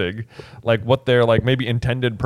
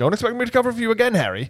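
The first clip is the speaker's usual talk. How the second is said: very high, rattled-off put-on character voice; 11 semitones higher than usual. Discussing a scene, voicing Lupin speaking to Harry, Lupin impression. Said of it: "That was a good Lupin impression".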